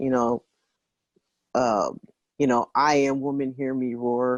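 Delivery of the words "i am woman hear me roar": ordinary talk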